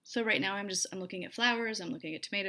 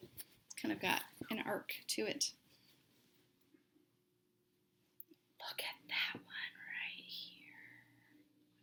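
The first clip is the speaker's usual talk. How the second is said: hushed, soft, breathy whisper; 8 dB quieter than usual. Showing a dyed fabric piece that turned out well, whispering. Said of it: "I don't know why I'm whispering".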